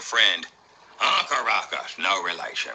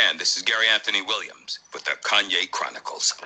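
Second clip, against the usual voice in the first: usual speaking voice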